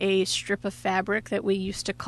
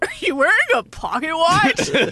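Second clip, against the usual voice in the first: really loud, high, swooping blurt; 9 semitones higher, 7 dB louder than usual. Retelling what the guy next to her in geography said: imitating someone saying it loudly. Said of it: "Like, really loud".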